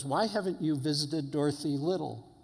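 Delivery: acted indignant, accusing, demanding tone. Retelling what a young man asked: imitating an indignant question. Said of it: "he just looked at me indignantly".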